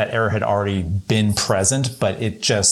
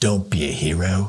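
put-on Australian accent; 2 semitones lower than usual. Quoting a line while talking about film scenes, in a Richard Norton impression. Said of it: "Your Richard Norton's pretty good".

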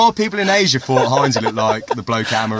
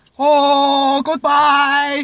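very high put-on Taiwanese accent, stretched "oh"; 3 dB louder than usual. Taking turns saying goodbye in country accents, in a put-on Taiwanese accent. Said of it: "And I'll do Taiwan".

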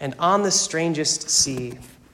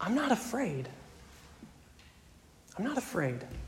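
faint, weak, gravelly whisper, very hushed; 6 semitones higher, 13 dB quieter than usual. Retelling an old man's words in the hospital: imitating a gravelly weak whisper. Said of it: "in a gravelly, weak whisper".

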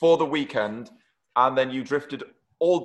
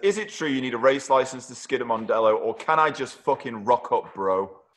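normal talking voice

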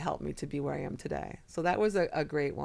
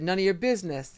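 put-on unfriendly tone, louder and higher; 4 semitones higher, 4 dB louder than usual. Retelling what a man said on his bad days, imitating an unfriendly reply. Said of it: "He didn't say it so friendly".

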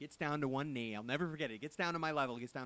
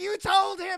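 acted-out furious, very loud, shrill angry yell; 16 dB louder than usual. Retelling a man accusing the speaker's mother of spoiling the surprise, imitating an angry accusation. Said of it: "looked like he was going to punch her".

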